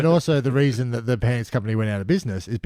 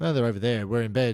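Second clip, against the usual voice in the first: ordinary talk, nothing marked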